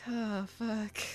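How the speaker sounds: glum defeated mutter. Voicing a traveler looking down at a broken wheel: dejected muttering. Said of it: "dejected look down at the wheel".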